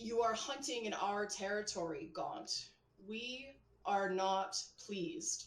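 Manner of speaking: ominous, throaty, guttural, menacing dragon voice. A player's character sends a telepathic message to Gaunt, in a guttural draconic voice. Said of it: "in my most guttural draconic".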